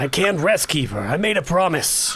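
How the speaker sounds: put-on New York accent, slipped into. Voicing a character answering the keeper, slipping into a New York accent. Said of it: "slipped into, into the New York accent".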